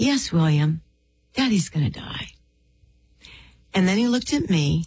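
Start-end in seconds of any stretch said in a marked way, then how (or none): 0.0-2.3 put-on, very tender, loving tone. Retelling a father's answer to his six-year-old son: imitating a precious, tender voice. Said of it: "said in the most precious voice".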